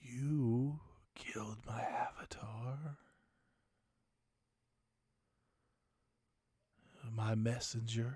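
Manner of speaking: low, deep husky whispering voice. A narrator voices an unseen presence speaking to the players, deep husky whisper. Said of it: "A deep, husky whisper".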